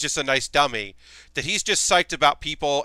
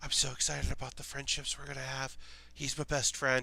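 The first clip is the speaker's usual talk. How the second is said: barely audible, very quiet mumbled whisper; 12 dB quieter than usual. Describing a character from a show who mumbles, doing Gordon's mumbling whisper. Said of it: "he just kind of mumbles".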